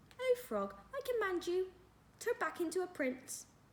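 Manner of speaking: put-on very high, pitched way up, little girl voice. Reading a story aloud, voicing Jodie as she speaks to the frog: Jodie's high voice. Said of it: "said Jodie in her high voice".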